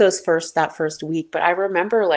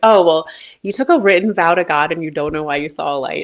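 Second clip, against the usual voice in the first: imitated laughing while talking; 3 dB louder than usual. Retelling a friend's reply while she laughs: imitating a friend laughing. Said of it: "cracked up laughing".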